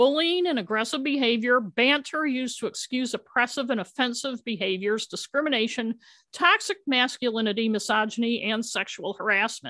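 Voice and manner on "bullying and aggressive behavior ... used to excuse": plain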